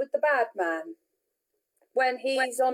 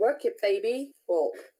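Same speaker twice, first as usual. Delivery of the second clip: ordinary talk, nothing marked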